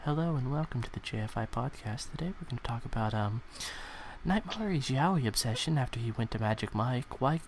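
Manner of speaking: soft, hushed voice right up on the mic. Mock podcast intro, done in a quiet close-mic voice. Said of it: "I get so very close to my microphone and I'm very so, like, quiet".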